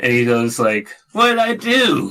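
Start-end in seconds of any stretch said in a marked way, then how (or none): 1.1-2.1 put-on little kid voice, higher. Retelling what an online player said after being killed: imitating a five-year-old's voice. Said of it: "like, five-year-old is on the mic".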